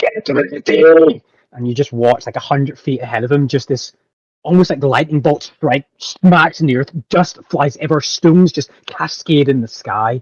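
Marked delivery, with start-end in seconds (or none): 0.0-1.2 slow, loud, drawn-out bellowing. Voicing a commander ordering people away: shouting. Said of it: "he just shouts".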